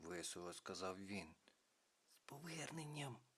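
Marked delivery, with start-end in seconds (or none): 2.1-3.2 very quiet, hushed half-whisper. A companion welcomes the narrator back to the group, half-whispering. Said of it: "прошепотіла Ялина".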